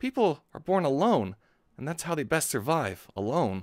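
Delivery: English dub anime voice. Speaker tries out an anime character's English dub line: Shinji English dub voice. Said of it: "but it's hard to mimic".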